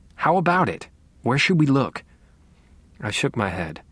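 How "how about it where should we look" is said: high-pitched, insistent, pressing, demanding tone. Pressing the narrator to say where they should look, demanding. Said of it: "Deborah demanded".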